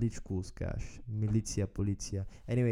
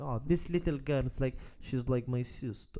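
heavy, bad, fake put-on Russian accent; 3 semitones higher than usual. Quoting an older Russian woman the speaker chatted with, in a put-on Russian accent. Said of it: "in a very Russian accent".

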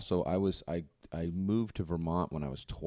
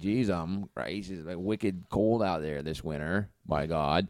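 heavy, laid-on, thick Vermont accent. Speaker from Vermont demonstrating the regional accent: thick Vermont accent. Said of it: "a really thick Vermont accent would be like this".

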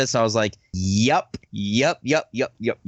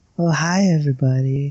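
put-on sensual, seductive female voice; 2 semitones higher, 3 dB louder than usual. Showing how they used to do female voices: sensual female voice. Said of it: "doing female voices".

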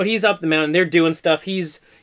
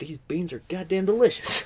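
put-on southern politician voice, quieter; 7 dB quieter than usual. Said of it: "That almost kinda got him to Bill Clinton".

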